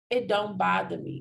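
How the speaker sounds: plain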